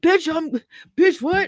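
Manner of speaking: mock confrontational, high-pitched, demanding yell. Retelling yelling at her on Flops Live: imitating own yelling. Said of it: "I yelled at her".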